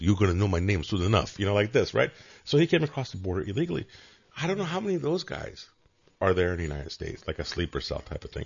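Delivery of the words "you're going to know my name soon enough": put-on accent from the Middle East. Retelling what a man answered a reporter who asked his name, Middle Eastern accent. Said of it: "Middle Eastern accent".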